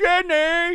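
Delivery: shrill, loud screaming. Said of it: "standing up screaming".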